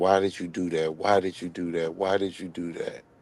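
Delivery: weeping, tearful, crying, repetitive speech. Retelling how someone kept asking while crying: imitating T-Baby crying. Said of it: "T-Baby was crying".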